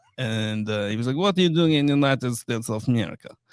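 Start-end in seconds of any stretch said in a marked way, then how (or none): 1.2-3.3 put-on Eastern European accent. Retelling a border officer's questions at JFK: imitating an Eastern European accent. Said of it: "this guy sounds Eastern European".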